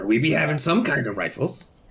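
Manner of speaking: put-on pirate accent. Answering a buyer who is looking for a rifle, in a pirate accent. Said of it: "in a pirate accent".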